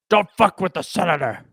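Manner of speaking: weak, failed attempt at a cartoon duck voice. Admitting they can't do the voice, attempting it anyway: dying Donald Duck voice. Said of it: "You sound like Donald Duck dying".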